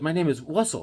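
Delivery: put-on lisping speech. Retelling what the traffic cop said back: imitating the cop's lisp. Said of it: "he had, like, a lisp or something".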